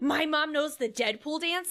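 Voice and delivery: put-on shocked kid voice. Retelling how kids on TikTok react to their mom dancing: imitating a shocked kid.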